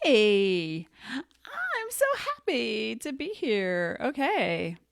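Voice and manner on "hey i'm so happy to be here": put-on very slow, drawn-out, sing-song Valley Girl accent. Opening with a cheerful greeting, in a Valley Girl accent. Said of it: "I don't know what Valley Girl accent that was".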